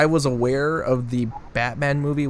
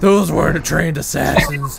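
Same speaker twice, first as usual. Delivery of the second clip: loud, gasping, breathless, creaky tough-guy voice; 3 semitones higher, 6 dB louder than usual. Imitating a movie character's line, mock breathless delivery. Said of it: "running out of breath when he's like".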